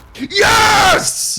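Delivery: high-pitched, loud, triumphant, excited yelling.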